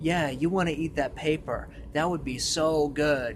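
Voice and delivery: sinister, creepy parasite creature voice. Describing a book's parasite that talks to a character, in a creepy parasite voice. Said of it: "talks to you in this kind of creepy voice".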